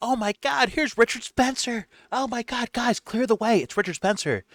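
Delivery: wild, high-pitched screams. Describing a guy in one of their videos, imitating a guy screaming. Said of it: "he's the guy screaming".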